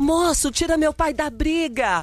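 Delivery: put-on boy's shout. Telling a story, a boy appears in front of a driver's car, retelling a boy's shout. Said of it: "aparece um menino gritando".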